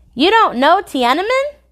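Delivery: very high-pitched, astonished, surprised disbelief. He replies to the narrator's question about his drawing, full of surprise. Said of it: "his voice full of surprise".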